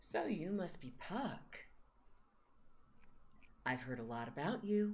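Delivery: lilting, tuneful, musical way of speaking. Voicing a stranger greeting puck: musical kind of voice. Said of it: "it's kind of like this musical kind of voice".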